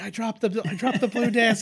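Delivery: very high, very loud, shrill yell. Imagining a character yelling from the bathroom: pretend yelling. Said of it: "you just hear him yell out".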